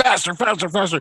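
very high, shrill, instructor-style yelling. Retelling a spin class, imitating the instructor yelling at him. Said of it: "she's yelling at me".

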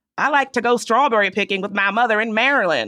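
slow, drawn-out Southern accent, words stretched long. Asked how a Southern accent would say it, giving an example: Southern accent. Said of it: "How would a Southern accent say it?".

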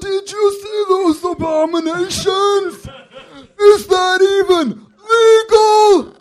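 put-on very loud, very high, very slow, shrill, drawn-out old man. Retelling what a friend's grandfather said on seeing a couple, in an old man voice. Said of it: "What's your old man impression?".

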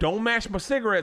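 put-on rural Southern accent. Discussing accents with a co-host, giving an example in a redneck Southern accent. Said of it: "A redneck ... kind of accent".

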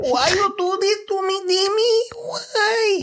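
very high, very slow, deliberately drawn-out put-on voice. Showing what a Linda Blair line sounds like: Linda Blair impression. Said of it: "That's Linda Blair".

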